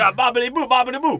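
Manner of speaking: shrill, loud, very high put-on greasy Italian accent. Retelling how a cartoon character who saves the elevator sounds: imitating a greasy Italian voice. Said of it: "he sounds like a greasy Italian".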